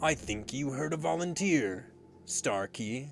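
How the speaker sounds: words purred like a cat. A pirate captain addresses a crewman after calling for a volunteer, purring. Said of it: "purring again".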